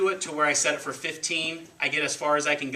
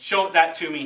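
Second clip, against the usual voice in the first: usual speaking voice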